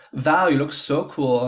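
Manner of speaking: terrible, clumsy put-on German accent. Retelling what a Berlin designer said: terrible German accent. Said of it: "in my terrible German accent".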